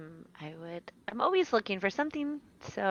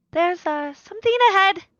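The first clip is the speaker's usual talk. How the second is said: shrill, very high and very loud yell; 11 semitones higher, 14 dB louder than usual. Playing a character calling down a warning from above: in-character yell. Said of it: "she yells down".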